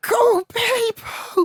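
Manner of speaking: screamed out, very high-pitched. Retelling being told by a man to scream it, retelling a scream. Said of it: "And I'm screaming it still".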